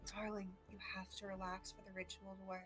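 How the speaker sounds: close, very quiet, hushed half-whisper. Leaning in to an NPC's ear during his ritual: half-whispering in character. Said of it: "whisper into his ear".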